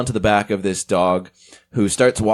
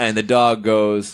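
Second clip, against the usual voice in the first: ordinary talk, nothing marked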